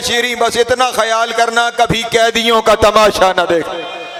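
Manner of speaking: high, very loud weeping.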